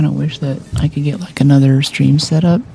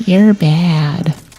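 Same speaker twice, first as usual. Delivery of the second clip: put-on voice of a young prepubescent child; 2 semitones higher than usual. Describing an online game opponent who suddenly speaks over the mic, little prepubescent kid voice. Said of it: "you get this little prepubescent voice".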